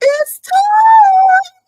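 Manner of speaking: very high, loud, with timing drawn out. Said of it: "In my [name] voice".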